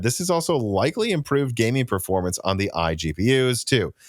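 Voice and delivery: ordinary talk, nothing marked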